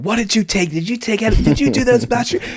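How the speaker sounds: mock frantic, shrill, very high-pitched screaming. Retelling how she screamed at him about taking mushrooms: imitating someone screaming. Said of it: "she was screaming at me".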